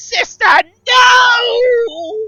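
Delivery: screeching voice. Narrator voices someone calling out from the back of the chamber: screeching voice. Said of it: "another screeching voice".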